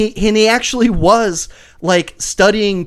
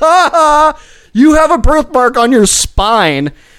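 high, loud, mocking voice. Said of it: "And you're like".

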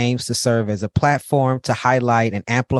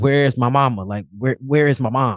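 put-on crying in a panicked child's voice. Retelling waking up at six to find mom gone, imitating crying as a child. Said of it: "I'm crying".

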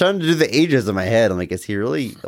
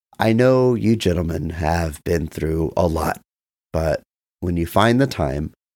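imitated calm tone, lower pitch; 6 semitones lower than usual. Retelling what a man still tied to the couch said, imitating a calm voice. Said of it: "he very calmly says".

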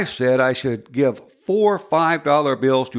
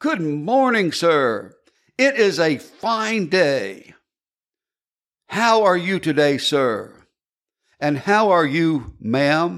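very forceful put-on soldier voice; 4 semitones higher than usual. Acting out a man standing at attention greeting the speaker, retelling a forceful greeting. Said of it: "In a very forceful voice".

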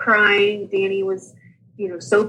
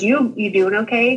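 ordinary talk, nothing marked

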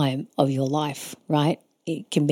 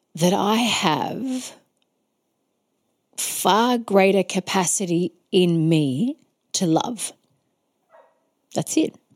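choked-up voice catching, close to crying; 4 semitones higher than usual. Speaking to longtime listeners and getting emotional: choked up, near tears. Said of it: "I want to cry".

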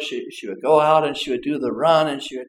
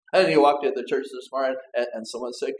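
ordinary delivery

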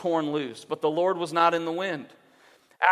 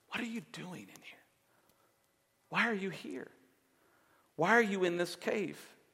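very soft, barely audible, hushed half-whisper; 10 dB quieter than usual. Retelling how Elijah is asked why he is in the cave: imitating a half-whisper. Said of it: "he whispers to him".

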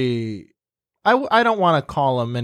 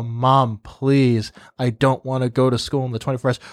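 acted-out pleading; 2 semitones lower than usual. Retelling how they begged their mom not to go to school, retelling begging Mom. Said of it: "I was literally begging, pleading".

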